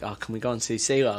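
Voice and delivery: plain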